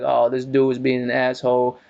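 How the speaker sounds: ordinary delivery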